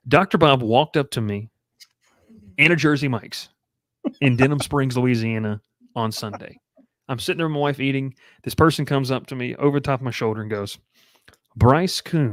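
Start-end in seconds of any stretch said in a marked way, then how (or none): 11.5-12.3 very slow, soothing, stretched-out drawn voice. Retell how Doctor Bob came up over your shoulder, in his very slow, drawn-out, soothing voice. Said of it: "in a very slow, drawn out, soothing voice".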